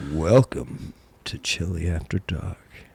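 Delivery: silky, velvet-smooth host voice, soft and breathy. Welcoming listeners to the chili after dark segment, the host uses a velvet smooth voice. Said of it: "Your velvet smooth voice".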